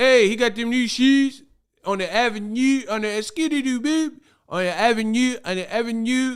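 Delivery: put-on thick Baltimore accent, very high-pitched. Imitating people in Baltimore, in a thick Baltimore accent. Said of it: "that thick Baltimore accent".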